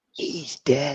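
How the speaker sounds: soft, hushed whisper. Leaning down to a kid, whispering. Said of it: "I'm gonna lean down and whisper".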